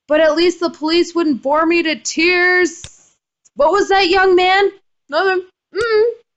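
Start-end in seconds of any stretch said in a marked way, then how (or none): 0.1-3.1 halting, faltering, hesitant calling out. Reading a visual novel aloud, calling after a departing friend: calling falteringly. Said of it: "as I call falteringly after her".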